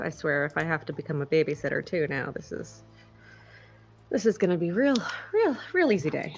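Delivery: muttering under the breath. Quoting what she said, muttering under her breath. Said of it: "she kind of mutters under her breath and goes".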